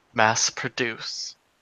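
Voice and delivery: muttered under breath. A narrator voices a woman looking off into the distance, said under her breath. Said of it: "she says under her breath".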